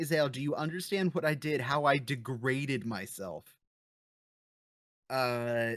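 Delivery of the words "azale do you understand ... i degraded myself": plain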